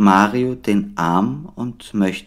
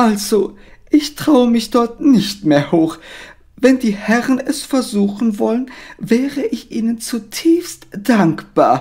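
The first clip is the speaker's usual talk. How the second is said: put-on old lady voice, much higher; 13 semitones higher than usual. In a told story with Mario and Frederik at the attic stairs, elderly lady voice. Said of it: "zuerst nur ein Schatten und dann kommt [name], eine ältere Dame".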